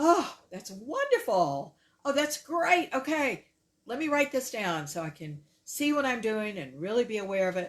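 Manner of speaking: acted, very loud, high, thrilled, eager, delighted gushing. The speaker retells how some of their clients respond, imitating a delighted client. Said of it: "Can you hear the difference?".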